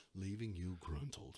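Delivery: very soft, low, hushed public-radio host voice. Showing a co-host how their put-on voice sounds, NPR voice. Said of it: "I put on my best to like, what is it, NPR? Voice?".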